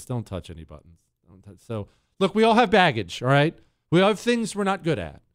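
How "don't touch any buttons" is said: hushed, very low, dry put-on deadpan. Retelling his reply after the speaker owned up, deadpan. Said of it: "he just looks at me with this deadpan look and he says".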